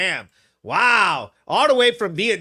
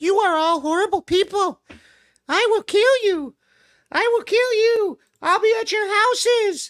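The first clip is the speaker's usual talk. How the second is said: tiny, squeaky, very high mouse voice; 13 semitones higher than usual. Mocking a woman at a hearing, imitating her in a little mousy voice. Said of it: "her little mousy voice".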